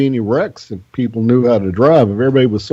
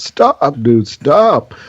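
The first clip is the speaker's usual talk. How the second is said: mock alarmed, urgent yell; 2 semitones higher than usual. Retelling yelling at a driver about to turn left on a red light: retelling a yell. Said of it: "And I'm yelling".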